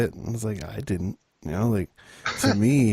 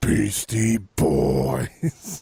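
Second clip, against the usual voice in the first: rough, creaky put-on voice. Showing how he should have said the band's name, Braun voice. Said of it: "in his Braun voice".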